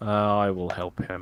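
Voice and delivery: beaten-down, resigned, defeated, dejected tone. Offering to help another player in a tabletop game, sounding defeated. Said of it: "you sounded so defeated in that".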